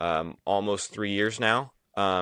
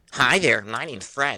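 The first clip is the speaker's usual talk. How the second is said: loud ventriloquist dummy voice; 4 semitones higher, 5 dB louder than usual. Speaker brings out the dummy Fred, who introduces himself in Fred the dummy's voice. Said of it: "introduce my friend Fred".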